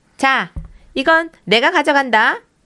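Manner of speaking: bold, loud, high shouting call-out. Reading a story aloud, a character standing at the door: shouting. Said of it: "이렇게 외쳤어요".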